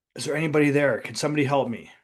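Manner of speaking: ordinary delivery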